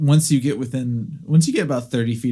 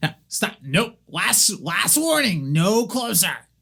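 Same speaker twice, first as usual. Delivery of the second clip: higher-pitched goblin character voice; 6 semitones higher than usual. The narrator voices a goblin looking at the approaching player; goblin voice. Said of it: "the that same goblin looks at you and goes".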